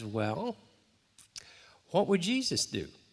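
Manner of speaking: real nice, sweet, sugary tone. Retelling what Anna said during a situation, imitating Anna's nice voice. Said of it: "in her real nice Anna voice that you all know".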